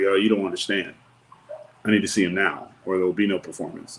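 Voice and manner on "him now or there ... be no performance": normal talking voice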